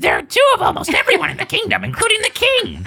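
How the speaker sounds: very high character voice, pitch swooping around. Reading a Mario story aloud, the narrator speaks Toad's line in Toad voice. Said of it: "should I do the Toad voice".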